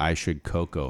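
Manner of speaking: ordinary talk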